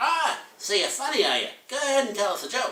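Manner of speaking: put-on elderly nun voice, pitched very high. Telling a joke to an audience, imitating a little old nun. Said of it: "little old nun will come up and say".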